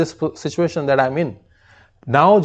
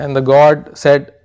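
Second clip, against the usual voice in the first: ordinary delivery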